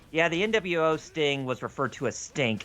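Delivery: ordinary talk, nothing marked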